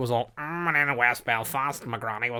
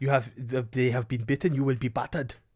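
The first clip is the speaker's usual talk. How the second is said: terrible fake Welsh accent. Acting out a comic bit, in the worst Welsh accent ever. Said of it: "It's the worst Welsh accent ever".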